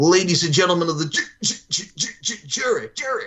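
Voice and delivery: high-pitched, stuttering delivery. Imitating the lawyer with the lisp and the stutter: imitating a stuttering lawyer. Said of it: "the lawyer with the lisp and the stutter".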